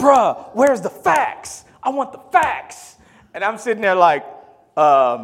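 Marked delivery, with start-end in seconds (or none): 0.0-3.0 very high-pitched, drawn-out yelling outburst. Retelling a guy in the dorm demanding facts: imitating someone yelling. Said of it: "started yelling".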